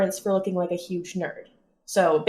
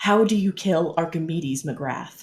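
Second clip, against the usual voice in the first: whispering in character, lower; 3 semitones lower than usual. Playing a character asking a banana phone a question: whispering in character. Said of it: "she whispers into it".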